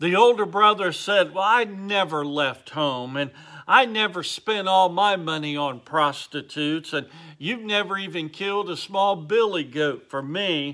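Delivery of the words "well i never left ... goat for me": usual speaking voice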